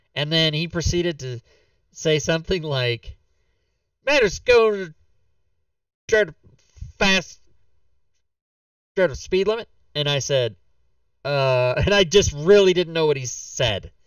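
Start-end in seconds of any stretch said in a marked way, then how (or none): 4.1-9.7 put-on heaviest Texas accent, laid on thick, pitched up. Retelling what a man who looked at your registration said, thick texas accent. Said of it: "he had the thickest Texas accent".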